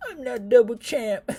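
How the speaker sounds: mock very high, very loud bawling wail. Mocking a defeated fighter sent home, imitating Adesanya crying. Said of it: "crying probably".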